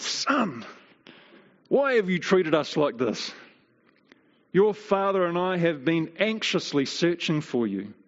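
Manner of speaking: worried, fretting, anxious mother voice. Reading a verse aloud, voicing the mother speaking to her son, voicing the mother's words. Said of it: "We should try and say it like she probably said it".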